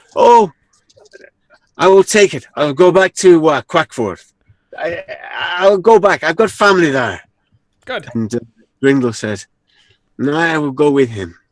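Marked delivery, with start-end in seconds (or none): 0.1-7.2 put-on Irish accent, pitched up. In a role-playing game, a player voices his character: Irish accent. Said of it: "And that's still Irish".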